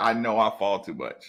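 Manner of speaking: plain adult man's voice. Retelling what a player says when told he falls too much: imitating a grown man's voice. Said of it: "In a grown man's voice".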